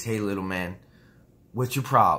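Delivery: a touch of mild southern drawl. Retelling how a man spoke to him, in a slight southern accent. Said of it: "with a little southern accent".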